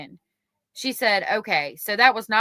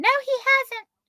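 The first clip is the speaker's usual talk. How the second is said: very high falsetto put-on girl's voice. Retelling what Miss Baxter said to Mister Shaw, Miss Baxter voice, put-on female. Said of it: "I should do a different voice because Miss Baxter is a girl".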